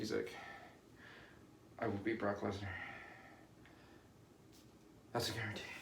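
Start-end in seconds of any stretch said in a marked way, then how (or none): 1.8-5.6 very quiet, breathless, flat monotone. Describing a wrestler vowing to beat brock lesnar, imitating his monotone delivery. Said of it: "saying it like very monotone".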